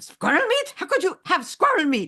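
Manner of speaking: put-on German accent, very high-pitched. Retelling a German man's reply to a New Yorker at a hot dog stand: German accent. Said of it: "in German".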